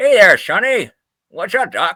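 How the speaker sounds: high cartoon voice spoken through clenched teeth. Imitating how Bugs Bunny once sounded, early Bugs Bunny voice through teeth. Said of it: "He kind of sounded like this, always, uh, always talking to his teeth".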